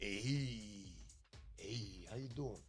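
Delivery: hey drawn out, very low, slow and soft. Doing the Fonzie bit from Happy Days after taking glasses off: Fonzie impression. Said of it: "That was Fonzie".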